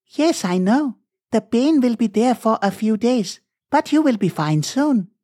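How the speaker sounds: put-on high-pitched young woman doctor voice. Narrator reading the doctor answering Mr. Avasthi about his pain, young woman doctor voice. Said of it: "A young lady doctor checked his pulse. / A young lady doctor checked his pulse. / A young lady doctor checked his pulse".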